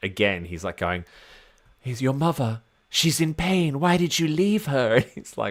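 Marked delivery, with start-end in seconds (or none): 1.8-5.0 eerie, unsettling, creepy voice, pitched high. Retelling what the possessed crewman says to a red shirt: imitating creepy Eyeless Gamble. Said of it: "doing a fabulous job of being, like, creepy".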